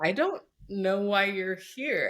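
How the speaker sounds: put-on hesitant, insulting delivery. Retelling a mortifying moment of misspeaking, reenacting a hesitant, insulting tone. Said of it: "such a like hesitant, like insulty kind of voice".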